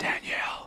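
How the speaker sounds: soft, whispered voice. Showing how the whisper dish works, calling to Danielle: whispering. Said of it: "just whispering".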